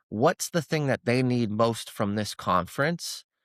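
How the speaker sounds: usual speaking voice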